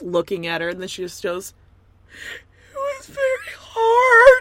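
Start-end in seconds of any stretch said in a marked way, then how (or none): 2.7-4.4 very high, very loud sobbing, wailing cry. Retelling a reality show scene, imitating Danielle crying. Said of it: "Immediate crying".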